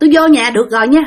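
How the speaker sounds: ordinary talk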